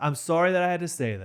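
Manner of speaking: patronizing, condescending, talking-down tone. Apologizing for saying women must act more manly: condescending tone. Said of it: "I was saying it in a very condescending way".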